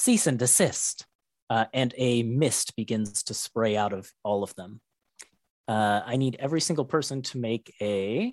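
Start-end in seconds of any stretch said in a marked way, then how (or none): 0.0-1.1 synthetic, machine-like, robotic feminine AI voice. Voicing the enemies the group is fighting: robotic feminine AI voice. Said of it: "like very much a robotic AI sort of feminine voice".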